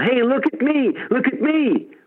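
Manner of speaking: play-acted, very high, drawn-out show-off holler. Picturing jumping above a crowd, waving arms: mock yelling for attention.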